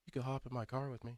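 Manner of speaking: very quiet, hushed, soft-spoken, barely audible voice. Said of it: "that sounded a little [name]-y".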